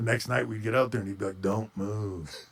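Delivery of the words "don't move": glum, mopey, droopy drone. Retelling a close friend's wrestling advice: imitating Scott Hall talking like Eeyore. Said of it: "he just talked like Eeyore".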